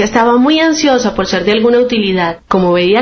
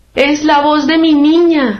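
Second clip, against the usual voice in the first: high-pitched, drawn-out crying out; 5 semitones higher than usual. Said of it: "gritó la reina blanca".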